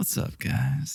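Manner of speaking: flirtatious voice. Redoing a video intro after being told to be more chill, flirty greeting. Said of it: "Now you're just flirting".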